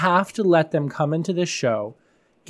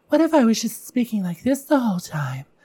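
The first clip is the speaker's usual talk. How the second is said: light, high voice with a little wispiness; 6 semitones higher than usual. Demonstrating how a different voice changes delivery, a little wispy voice. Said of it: "What if we had a little wispiness to it?".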